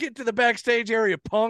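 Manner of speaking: put-on, toned-down, mild, high-pitched yell. Retelling yelling at someone swatting at him with a paddle: imitating own yell. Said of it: "and I'm yelling".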